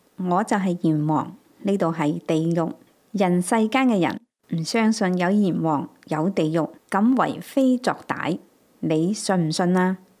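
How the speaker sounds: plain reading voice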